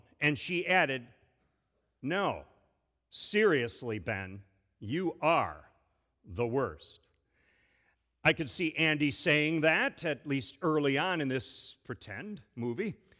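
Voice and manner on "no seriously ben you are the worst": dark, low, slow, grave, dead-serious tone. In a pretend rom-com turning dark, [name] answers Benjamin, dark serious tone. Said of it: "took on a much more dark and serious tone".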